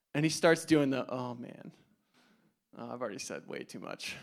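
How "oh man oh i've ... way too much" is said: awkward, sheepish, hushed near-whisper. Retelling an Uber driver's reaction on learning the speaker is a pastor: imitating someone sheepish. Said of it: "kinda awkwardly, sheepishly".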